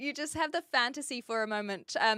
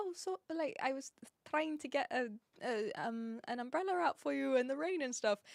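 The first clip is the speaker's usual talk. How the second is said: tender, soft, gentle, mild-mannered delivery; 7 dB quieter than usual. Speaker quotes a man they were describing, imitating his gentle voice. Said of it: "but he was so gentle".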